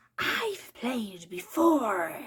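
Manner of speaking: hissed, sing-song with swooping pitch. Reading a story, the narrator voices a man's reply, hissed. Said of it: "he hissed".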